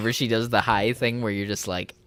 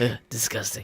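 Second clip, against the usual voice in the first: put-on falling-inflection delivery, quieter; 3 dB quieter than usual. Talking about Gordon Ramsay's inflection, the speaker does a Gordon Ramsay impression. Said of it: "I just love Gordon Ramsay's inflection on everything. He's just like".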